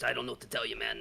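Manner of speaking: put-on elderly man character voice. Voicing an old man with a cane answering a player: old man character voice. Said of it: "He just goes".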